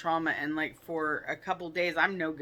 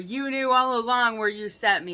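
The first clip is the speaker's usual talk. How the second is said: all-out, loud, high-pitched screaming; 6 semitones higher, 8 dB louder than usual. Recounting a dream, reenact screaming at your mother. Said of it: "I was screaming at my mother".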